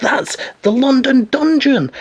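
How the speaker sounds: play-acted very high announcer-style scream. Recounting a wrestling match as Mason locks in the wrist lock, imitating someone screaming. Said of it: "Nigel screams".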